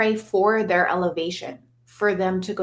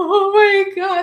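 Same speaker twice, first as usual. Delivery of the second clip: very high, loud outburst, holding back tears; 13 semitones higher, 7 dB louder than usual. Retelling filming a concert tribute while shaking: retelling holding back tears. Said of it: "trying not to cry".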